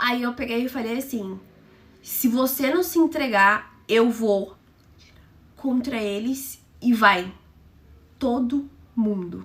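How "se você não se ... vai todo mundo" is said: ordinary delivery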